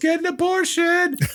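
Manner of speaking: mock very high-pitched, screeched, shrieking yell. Retelling a movie scene where a character yells: imitating a yell. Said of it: "Father John yells".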